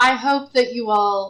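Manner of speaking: deliberately bad therapy-speak voice. Imitating how a character talks: Cameron's therapy speak. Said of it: "therapy speak, but, like, not good".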